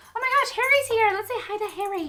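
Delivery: squeaky, very high pet-talk voice. Speaker greets Harry, who has just arrived, in a dog voice. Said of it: "My dog voice".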